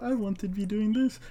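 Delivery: mocking, whiny, high-pitched put-on beggar voice.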